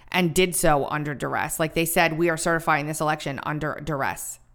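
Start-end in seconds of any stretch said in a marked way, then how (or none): none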